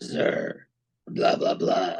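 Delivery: slow, mechanical, robot-sounding soldier voice. Describing the troopers in a series to a co-host, robotic stormtrooper voice. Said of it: "they all have this real robotic sounding voice".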